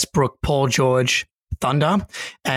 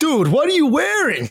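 put-on Boston accent, pitched very high; 12 semitones higher than usual. Retelling what a stranger from Boston said at a festival: imitating a Boston accent. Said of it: "that's the accent".

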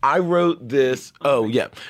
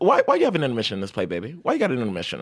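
deliberately bad put-on voice, widely swooping pitch; 3 semitones lower than usual. Retelling the director's question about the intermission: bad Robert O'Hara impression. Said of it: "This is a bad Robert O'Hara impression".

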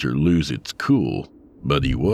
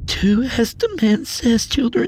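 voice cracking and breaking. A woman tells the hostage children to obey the gunman, voice cracking. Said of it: "Her voice cracked".

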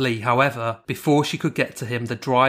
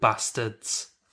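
strong stress on bastards, said with great conviction; 6 dB quieter than usual. Reading out a case account: stress on bastards. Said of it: "Do you like how I said bastards there".

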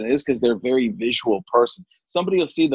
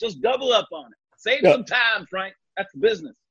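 put-on Southern accent, higher pitched; 8 semitones higher than usual. Doing a Southern-accented impression of Terry Bradshaw talking to Frank: Terry Bradshaw voice. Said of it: "when you do Bradshaw's voice".

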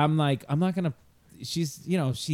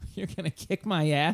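amused, scoffing, laughing, mocking disbelief. Retelling mocking a classmate's threat, imitating laughing mockery. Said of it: "I would just laugh at him".

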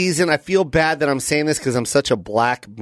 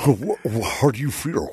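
very creepy, scary put-on voice. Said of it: "That's the scariest voice you've ever done".

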